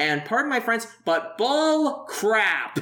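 loud, high-pitched, full-force shouted outburst. Reacting to a character's claim that studying is all she's good at: loud outburst. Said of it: "you made that so loud".

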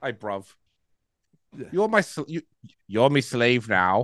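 exaggerated put-on British accent. Joking about the film Gladiator, doing an over-dramatic British accent as Joaquin. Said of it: "over dramatic British accent".

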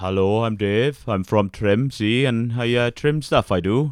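slow, drawn-out, put-on local Welsh accent. Imitating a local trainee introducing himself in the class: imitating a local welsh person. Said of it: "that's very Welsh".

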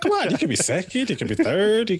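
very high, comic delivery, pitch swooping wildly. Retelling a scene from the movie Talladega Nights: Will Ferrell impression. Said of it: "That was a nice Will impression right there".

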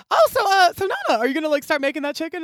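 high, loud, sugary coaxing voice.

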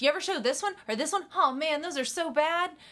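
high, fast, enthusiastic gushing delivery. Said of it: "but she says it enthusiastically".

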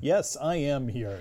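on-air radio broadcaster delivery. A podcast guest answering the host's introduction, in a radio voice. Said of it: "Is this my radio voice?".

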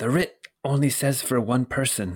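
whispered, hushed voice. Voicing a guard who quietly warns a player at the gate: whispering guard. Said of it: "then he whispers to you and he says".

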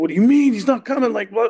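agitated, loud, worked-up outburst climbing as it goes. Retelling how the man he phoned reacted, imitating someone getting worked up. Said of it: "He's like getting all worked up".

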